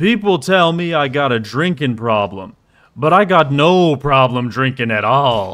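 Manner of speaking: put-on drunk voice. Retelling a man's reply after he ignored the question; imitating a drunk voice. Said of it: "in like the most drunk voice you could imagine".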